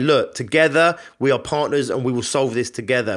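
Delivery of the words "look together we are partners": usual speaking voice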